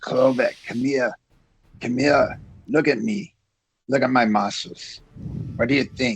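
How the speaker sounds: sly, secretive, conspiratorial sideways aside. A bodyguard character speaks to another bodyguard behind his boss's back, in a quiet voice. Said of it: "but in a quiet voice, so the boss doesn't know".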